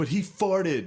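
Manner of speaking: acted-out, high, blurted-out yell. Retelling talking back to a teacher: retelling own past yell. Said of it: "And I yelled that".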